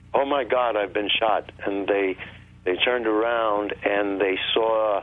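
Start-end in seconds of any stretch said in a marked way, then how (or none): none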